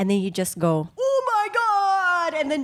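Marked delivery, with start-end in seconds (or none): 1.0-2.4 shrill, very high, loud excited squeal. Retelling an excited outburst with friends in a restaurant: imitating Mikael's loud exclamation. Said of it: "you got excited about a topic".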